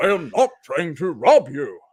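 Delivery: loud, high-leaning, animated hobbit voice. Explaining to Pete how you shift between one actor's characters, do an Ian McKellen impression. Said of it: "then I get the Ian McKellen from sort of uh, Magneto to Bilbo Baggins".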